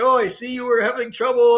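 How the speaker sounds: put-on speaking with French accent. Retelling what a helper said at an intersection: imitating a friend's french accent. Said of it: "his French accent".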